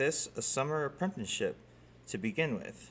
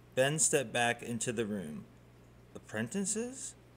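ordinary delivery, nothing marked

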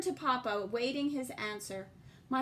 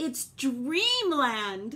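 proud, raised, prideful voice; 6 dB louder than usual. An uncle shows the narrator machines built from his drawings, announcing proudly. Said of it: "Uncle Gurney announced proudly".

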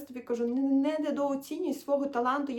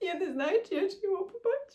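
tearful voice, on the verge of tears; 6 semitones higher than usual. Remembering a woman's stories about Kyiv, speaker speaks on the verge of tears. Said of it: "чому мене так прориває зараз на сльози".

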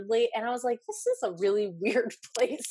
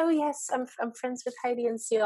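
put-on English accent; 5 semitones higher than usual. Recalling the man whose mail they opened as an intern, Adam impression, English accent. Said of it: "that was your English accent?".

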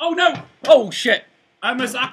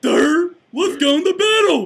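dumb, dopey, thick-headed doofus voice. Playing a stupid cousin of Jon Snow, calling for battle: playing Jon Snow's stupid cousin. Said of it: "I'm like Jon Snow's stupid cousin".

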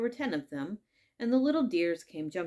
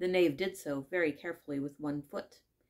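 plain reading voice

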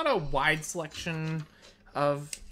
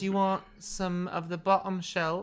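sudden slip into put-on Cockney accent; 4 semitones higher than usual. Taking drink orders in a scene, in a Cockney accent. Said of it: "I don't know why I'm going Cockney all of a sudden".

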